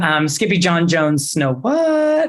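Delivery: "snow what" said with rising, questioning intonation.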